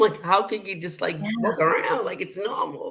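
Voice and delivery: voice catching on tears, choked up and tearful.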